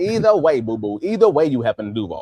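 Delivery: lively, animated put-on voice, pitch swinging widely. Answering a co-host's football point in a Katt Williams voice. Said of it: "in that Cat Williams voice".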